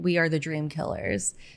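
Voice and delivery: normal talking voice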